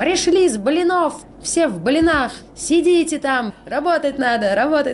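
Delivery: high-pitched, loud, scolding yell.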